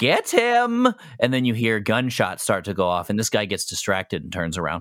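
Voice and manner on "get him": very high, echoey, distant call down a hallway. Narrating a scene, voicing someone heard down the hallway: echoey voice. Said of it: "an echoey voice say".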